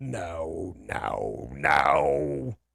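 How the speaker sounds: "no" dropped very low and dragged out. A player speaks in character, doing it like the Star Wars Emperor. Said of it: "I gotta say like the emperor".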